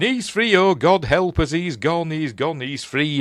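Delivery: acted grieving, high, mournful lamenting cry. Retelling a vampire story, imitating a woman lamenting. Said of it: "as though she's like lamenting it".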